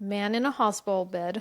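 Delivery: ordinary delivery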